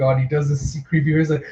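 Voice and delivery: ordinary talk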